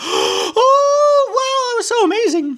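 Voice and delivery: very high-pitched, squeaky cartoon mouse voice. In an at-home video, the speaker drifts into a Mickey Mouse voice. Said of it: "talking like Mickey Mouse now".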